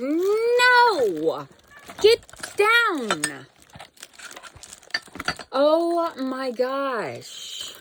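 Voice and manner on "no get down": shrill, swooping, high and loud yelling. Speaker telling their dog Loki to get down, yelling at the dog. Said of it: "I'm sorry for yelling".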